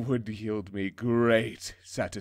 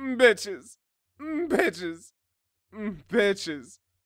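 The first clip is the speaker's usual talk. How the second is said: put-on very posh, princely royal voice; 10 semitones higher than usual. Showing a co-host how to call out the word, in the poshest, most princely voice. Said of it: "in the poshest, most princey way you can muster".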